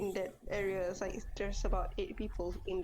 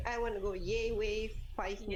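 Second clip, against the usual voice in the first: ordinary talk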